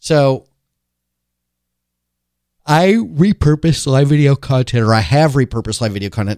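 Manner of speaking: fighting through a yawn. Recording a talk on a voice recorder, fighting through a yawn. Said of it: "I was fighting through a yawn there".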